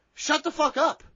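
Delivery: high, loud yelling. Telling everybody off after agreeing with a point: yelling. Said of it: "I'm yelling at everybody now".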